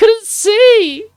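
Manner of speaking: shrill, very high, very loud whine, drawn out. Speaker keeps making excuses after being told to shut up, in a whiny voice. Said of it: "Your voice is so whiny".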